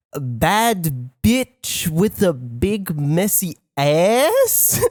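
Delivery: put-on heavily accented English. Retelling what the accountant said on spotting the drive name: imitating someone's thick accent. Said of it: "a really thick accent".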